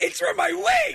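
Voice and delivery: high shriek with laughter.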